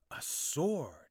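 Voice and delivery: gasped words. Reading Arthur's line as he spots a sword fixed in the rock, gasping. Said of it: "he gasped".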